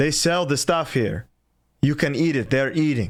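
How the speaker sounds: put-on heavy Russian accent, laid on thick. Retelling what a lady said to him while he was screaming, thick russian accent. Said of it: "a lady in like thick Russian is like".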